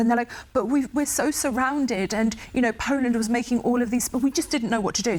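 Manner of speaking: put-on, self-pitying poor-us woe-is-me lament. Explaining which countries made pacts, mimicking them in a put-on woe-is-me voice. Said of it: "sorry that I'm using that voice".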